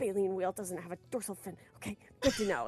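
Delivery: quiet muttering under the breath, to oneself. Retelling how the other speaker was cramming: imitating someone muttering. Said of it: "I could hear you just muttering".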